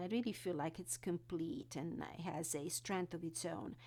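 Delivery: normal talking voice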